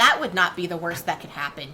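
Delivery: muttering under breath. Barked at and sent away, she answers back, muttering under her breath. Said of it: "she says under her breath".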